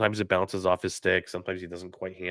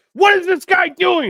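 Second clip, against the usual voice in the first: very high-pitched, shrill, full-volume yell; 11 dB louder than usual. Retelling how they react to a hockey game on TV: imitating own yelling at the TV. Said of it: "yell at somebody on my T V".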